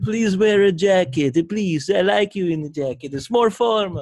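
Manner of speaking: put-on loud Italian accent. Acting out what Natalia says about wearing the suit, in an Italian accent like Luca Rubinacci. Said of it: "She sounds Italian now".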